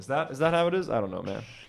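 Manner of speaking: usual speaking voice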